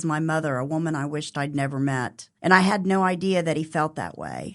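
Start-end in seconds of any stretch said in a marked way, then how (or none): none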